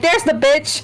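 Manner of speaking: mild, half-shouted, called-out voice. Playing a character who spots an enemy across the battlefield: yell. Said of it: "I'm gonna yell it out".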